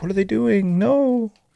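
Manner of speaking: very high, soft, hushed, tearful crying. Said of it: "the poor daughter's like".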